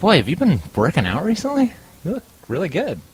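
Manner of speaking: tiny, small, high voice that swoops. Telling a joke, voicing the little voice complimenting a drinking man; little voice. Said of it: "here's the little voice again".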